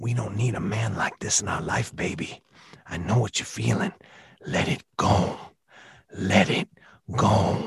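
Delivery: deep, very slow, drawn-out voice. Quoting a favorite Rocky II line to Apollo as Tony Burton impression. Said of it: "I actually do an impression of the late, great Tony Burton".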